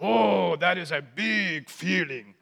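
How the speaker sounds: slow, drawn-out puppet monster character voice. Explaining how Sesame Street teaches kids about emotions, Cookie Monster voice. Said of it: "The Cookie Monster says".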